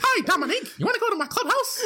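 very high, tiny, squeaky cartoon character voice. Asked to say goodbye to the people, doing a Mickey Mouse voice. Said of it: "I can sound exactly like Mickey Mouse".

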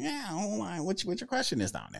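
high, swooping animated voice, pitch swinging around. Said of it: "when I break out the Mickey Loomis voice".

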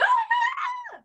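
mock very high, frightened shrieking scream. Retelling helping the stuck dog out of the crate: imitating a screaming dog.

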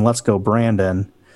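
normal talking voice

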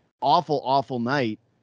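plain

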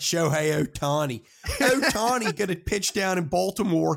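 put-on high, loud scream in a Baltimore accent.

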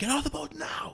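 hushed, breathy stage whisper. Retelling an official ordering the speaker off the boat: imitating a man yelling. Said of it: "toad-like guy who's yelling at me".

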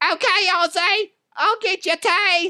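very high, pitched way up voice. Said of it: "Maybe this sounds like, uh, Sharon".

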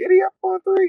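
loud, very high-pitched squeaky shout. Retelling how the guy with the smallest voice breaks the team down, in a loud, squeaky voice. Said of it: "loud, squeaky voice".

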